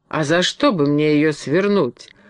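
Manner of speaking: snapping sharply. Bilan answers the Woodman who scornfully called him a traitor, snapping back. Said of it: "огрызнулся Билан".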